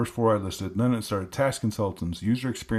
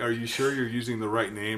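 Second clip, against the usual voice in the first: put-on sassy attitude. Quoting the chatbot's reply about the podcast name: imitating a sassy ai. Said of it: "it got real sassy".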